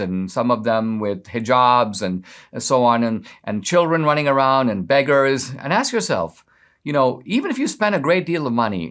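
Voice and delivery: ordinary talk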